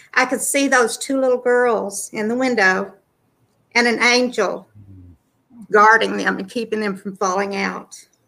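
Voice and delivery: choked-up voice fighting to stay composed. Describing an open vision from God, holding back emotion. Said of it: "I'm trying not to get emotional".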